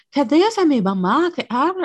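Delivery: put-on forced, over-the-top Yucatecan accent, high and loud. Imitating TikTokers who force their accent: imitating a forced Yucatecan accent. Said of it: "no sé cómo fuerzan su acento".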